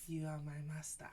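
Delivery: put-on intimate pillow-talk voice. Retelling how he led her in prayer: imitating a pillow-talk voice. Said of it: "that voice guys put on at night when you're trying to, like, do pillow talk".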